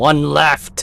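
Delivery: loud, teasing yell.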